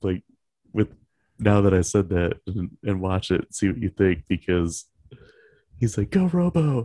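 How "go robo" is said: very high, rapid, tossed-off throwaway quip. Quoting a movie character who pops in, imitating a line said really fast. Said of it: "he says it really fast".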